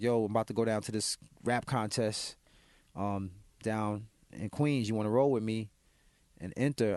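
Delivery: ordinary delivery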